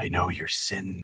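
soft, voiced stage whisper. Voicing a creature heard inside a player's mind: half-whispering. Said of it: "you hear whispers of".

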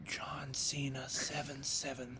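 hushed, very quiet whisper. Retelling leaning in to tell her his password when she asked, whispered. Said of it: "leaned in and whispered to her".

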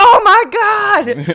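very loud, high, shrill screech, stretched 'my'. Retelling a quarterback chased by a pass rusher: imitating Geno Smith screaming. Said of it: "Gino screaming".

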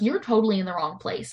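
ordinary talk, nothing marked

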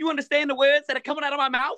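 very high, comic celebrity-style voice. Quoting a movie line for friends: Chris Tucker impression. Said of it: "You do a good".

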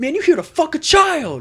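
very high, loud, swooping scream. Retelling a loud man confronting someone in a crowded mall, imitating screaming. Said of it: "just screaming".

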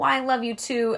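bitchy, snippy woman's voice. Retelling a show scene, quoting the mom's reply: imitating a bitchy mom. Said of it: "so fucking bitchy".

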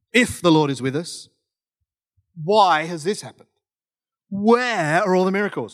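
sassy, complaining tone full of attitude. Reading a biblical reply aloud to show its tone, mock-sassy tone. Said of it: "He's probably not as sassy as I am right now".

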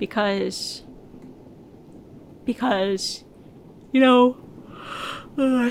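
speaking through a yawn. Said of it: "sorry, I'm yawning again".

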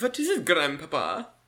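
exaggerated German accent. Joking about the greatest beer in the world, in a horrible german accent. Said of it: "my horrible... German accent".

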